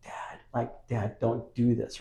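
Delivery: tiny, very quiet, slow whispered plea. Retelling how an actress called out to her dad: imitating a very quiet whisper. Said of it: "She says and whispers very quietly".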